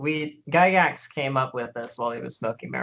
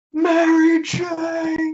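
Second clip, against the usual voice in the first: very high, shrill fake yell, drawn out; 7 dB louder than usual. Joking with the table about Gygax, fake yelling. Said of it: "fake yelling that voice".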